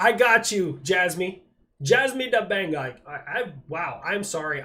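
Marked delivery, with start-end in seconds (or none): 0.0-3.0 loud, shoddy, bad put-on Jamaican accent. Replying to a fan's chat request on stream, in a bad Jamaican accent. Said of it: "I said that in a Jamaican accent".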